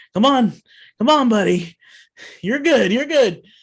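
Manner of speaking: high, loud yelling. Voicing a character pulling a fallen friend up: yelling. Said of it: "and he's yelling".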